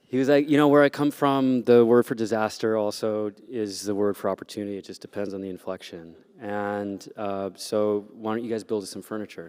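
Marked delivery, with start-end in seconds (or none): none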